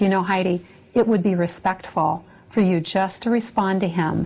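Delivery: plain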